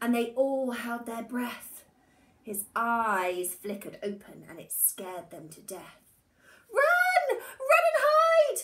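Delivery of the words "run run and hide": very high, drawn-out, despairing outcry. Reading a story, the animals cry out after waking the bear, in despair. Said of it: "They all cried in despair".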